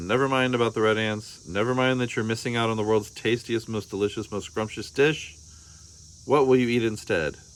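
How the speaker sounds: ordinary delivery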